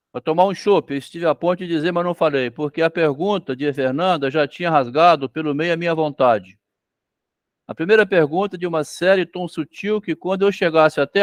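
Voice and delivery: ordinary talk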